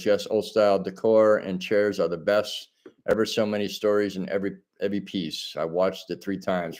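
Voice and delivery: ordinary talk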